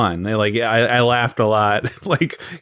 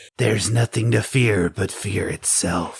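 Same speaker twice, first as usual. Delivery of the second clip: raspy put-on impression voice, quieter; 4 dB quieter than usual. Imitating the actor from Mortal Kombat, use a raspy Christopher Lambert voice. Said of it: "raspy Christopher Lambert, like Raiden voice".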